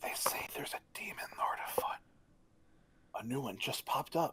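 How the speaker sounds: soft, hushed, secretive whisper. Voicing a character who leans in to speak to travelers: whispering. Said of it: "He whispers in".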